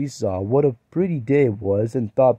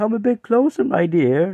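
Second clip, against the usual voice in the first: put-on high, wavering, quavering old woman voice; 9 semitones higher than usual. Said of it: "in a high, quavering voice".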